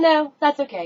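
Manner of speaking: very high-pitched, casual, offhand, nonchalant tone. Retelling a manager's reply to her husband calling in late, imitating a nonchalant tone. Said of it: "very nonchalantly".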